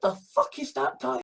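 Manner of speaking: usual speaking voice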